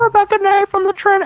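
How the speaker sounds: very high, loud female voice impression.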